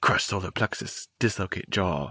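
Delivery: put-on whispering. Retelling a movie fight scene's inner monologue: imitating whispered inner monologue. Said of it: "whisper talking in his brain".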